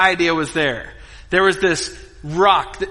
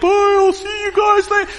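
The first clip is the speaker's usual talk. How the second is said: put-on high, breezy, carefree kid voice. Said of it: "Peter's like".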